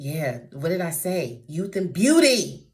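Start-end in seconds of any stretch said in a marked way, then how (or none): 1.5-2.5 abrupt, very loud, high raised voice. Reading aloud to listeners and commenting, suddenly raised voice. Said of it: "unexpectedly raising my voice".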